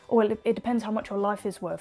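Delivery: ordinary talk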